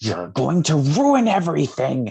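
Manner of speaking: high, loud, roaring monster snarl.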